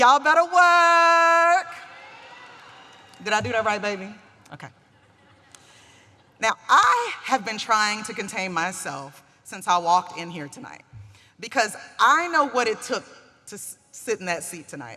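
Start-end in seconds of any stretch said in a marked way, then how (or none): 0.0-1.7 high, loud, slowly drawn-out and stretched delivery. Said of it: "and I quote".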